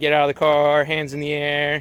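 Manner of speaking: normal talking voice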